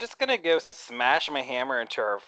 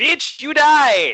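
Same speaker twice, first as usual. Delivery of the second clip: screamed war cry, very high, shrill, very loud; 12 semitones higher, 12 dB louder than usual. In a role-play fight, a player's character runs at an enemy: yelling a battle cry. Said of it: "I yell a battle cry".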